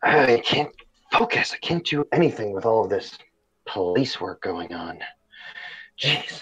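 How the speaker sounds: with a sigh. Voicing a character who slams a pad shut; sighing. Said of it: "and sighs".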